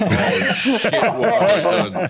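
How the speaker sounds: high, loud, shocked, horrified panic.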